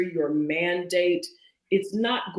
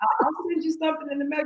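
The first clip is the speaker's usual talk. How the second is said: pleasant, sweet, polite tone, higher; 9 semitones higher than usual. Showing how to turn down an invitation: pleasant polite refusal. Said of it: "say it so pleasant".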